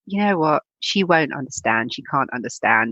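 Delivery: ordinary talk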